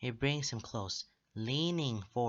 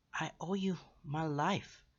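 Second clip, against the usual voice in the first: hoarse, raspy whisper, higher and slower; 6 semitones higher than usual. Narrator reading one character's reply to another, in a hoarse whisper. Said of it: "voice hoarse as he whispers".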